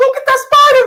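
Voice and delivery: shrill, very high, loud, mocking put-on lady voice. Mocking another speaker's fear of a spider: imitating someone sounding like a lady. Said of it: "you sound like a lady".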